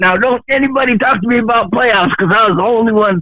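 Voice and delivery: put-on worked-up yelling. Retelling how the host yelled during today's show: imitating someone yelling. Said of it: "yelling, like".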